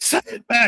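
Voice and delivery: mock very high, insistent, aggressive delivery. Retelling what a friend in South Carolina says: imitating an aggressive demand. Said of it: "as aggressive as a Southern person".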